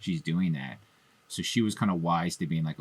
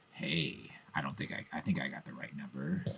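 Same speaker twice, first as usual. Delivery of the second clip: seductive, sexy, come-hither tone; 3 semitones lower, 8 dB quieter than usual. Showing how the killer's phone calls start: Ghostface voice. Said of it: "starts off where he's very much like".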